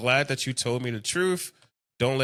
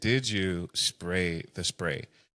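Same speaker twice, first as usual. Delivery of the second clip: very calm, low, slow, unhurried voice; 6 semitones lower, 4 dB quieter than usual. Retelling how a mom questioned her daughter after being pepper-sprayed, retelling a mom's calm question. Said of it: "she's doing it so calmly".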